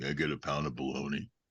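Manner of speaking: very low, deep, rumbling voice. Retelling overhearing a voice at a deli counter: Harrison Ford impression. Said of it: "a very familiar voice go".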